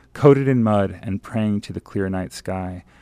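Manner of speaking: ordinary delivery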